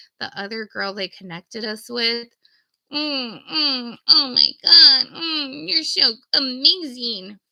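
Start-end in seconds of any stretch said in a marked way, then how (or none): 2.9-7.3 slow drawn-out moans. Retelling how another caller sounded on a three-way call: imitating someone moaning. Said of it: "you don't wanna just be moaning".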